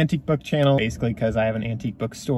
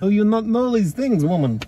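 very high-pitched put-on Russian accent; 9 semitones higher, 3 dB louder than usual. Teasing a friend in conversation, in a fake Russian accent. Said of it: "You and your fake Russian accent".

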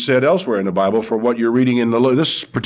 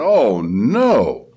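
mock loud groan. Retelling what a guy at a nearby cubicle said, imitating him groaning aloud. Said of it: "he groaned aloud and said".

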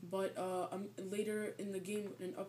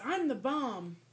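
put-on cartoon character voice; 4 semitones higher, 8 dB louder than usual. Presenting a character and his catchphrase, as a Countdown impression. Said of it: "I was trying to imitate him".

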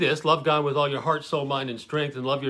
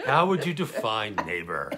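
sly put-on voice, lower pitch; 4 semitones lower than usual. Retelling a questioner's reply, looking for a loophole: sly Pepe Le Pew voice. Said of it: "it's sort of a Pepe Le Pew".

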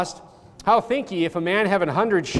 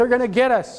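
play-acted frightened, panicky, high-pitched alarm; 5 semitones higher than usual. Retelling the Bible story as the Syrian army invades, Elisha's servant is acting out scared panic. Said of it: "he's all scared".

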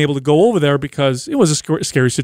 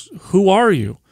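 put-on, utterly baffled, super confused tone; 3 semitones higher than usual. Retelling a former training client not recognizing them: imitating someone super confused. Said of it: "super confused".

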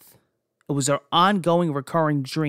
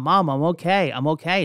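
usual speaking voice

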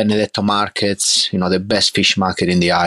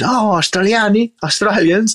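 imitated Italian-accented English, pitched up; 13 semitones higher than usual. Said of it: "he picked up the accent in Engli-, the English accent".

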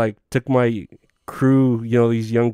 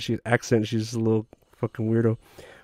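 usual speaking voice

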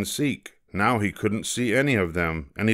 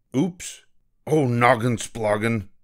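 abrupt, sudden blurted outburst; 3 semitones higher than usual. A rabbit counting the bunnies loses count and exclaims. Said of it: "He exclaimed".

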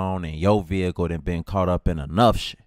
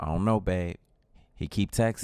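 ordinary talk, nothing marked

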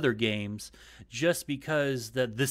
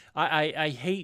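usual speaking voice

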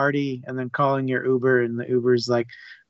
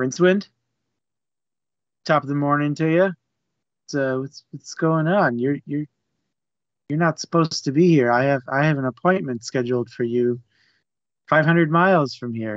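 put-on chummy, easygoing, cordial friendly politeness. Retelling a scene, voicing Death greeting Rincewind: imitating Death being cordial. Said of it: "so cordial with Rincewind".

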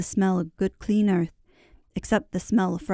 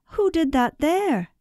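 very high, startled, surprised cry; 9 semitones higher than usual. A man spots a small clearing in the grass and points; surprised cry. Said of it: "he cried".

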